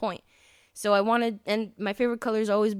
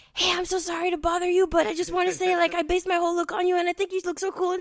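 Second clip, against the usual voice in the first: put-on whisper, higher; 9 semitones higher than usual. Retelling crouching next to someone in a theater: retelling a whisper. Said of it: "I was whispering".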